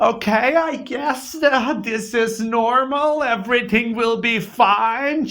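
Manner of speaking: very high voice, thin and drawn out. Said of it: "this is the closest I can do an imitation of her".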